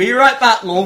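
put-on West Country accent. Trying out a version of a Terminator line for another country, in a West Country accent. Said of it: "I was thinking more like West Country".

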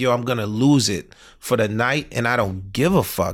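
ordinary talk

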